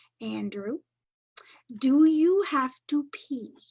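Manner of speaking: very slow, careful, deliberate word-by-word enunciation. Narrator reads Father asking Andrew again before the car ride, very slow and clear. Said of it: "Father said very slowly and clearly".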